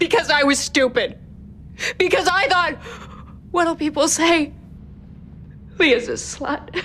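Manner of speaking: high, sobbing, crying through the words. Leah explains why she didn't correct Mac's wrong idea, sobbing.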